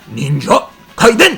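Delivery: exaggerated mock Japanese samurai style delivery. Pronouncing the game title Ninja Gaiden in exaggerated Japanese samurai style. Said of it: "if you really want to be Japanese samurai about it".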